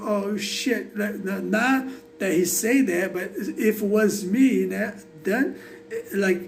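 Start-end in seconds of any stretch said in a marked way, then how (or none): none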